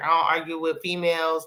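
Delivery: ordinary delivery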